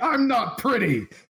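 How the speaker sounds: very high, in-character shrieking scream. Voicing a character who is called pretty by a foe: screaming in character. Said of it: "Emran just starts screaming".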